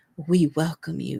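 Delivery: put-on seductive voice. Repeating a man's words from a recording her father played: mock-seductive. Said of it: "Like like almost like in a seductive".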